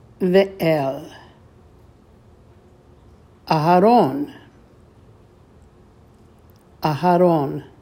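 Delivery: slow Hebrew, word by word, with pauses between words.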